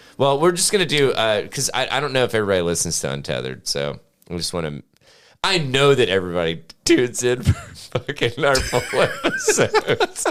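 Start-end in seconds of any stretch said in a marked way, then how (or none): 5.5-10.3 laughing while talking, with swooping pitch. Telling listeners why they tune in, laughing while talking. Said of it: "I can't say that without laughing".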